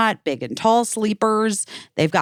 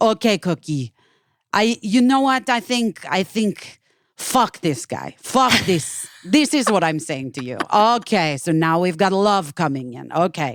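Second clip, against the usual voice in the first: fake Eastern European accent, much higher pitch; 2 semitones higher than usual. Describing an Instagram tarot reader, the speaker imitates her: imitating Eastern European accent. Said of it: "like an Eastern European accent".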